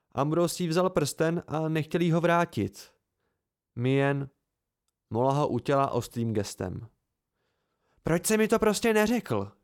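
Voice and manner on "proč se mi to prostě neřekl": irritable, barked snap, pitched up. A narrator reads a woman's line, aimed at him: snapped irritably. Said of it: "štěkla na mě podrážděně".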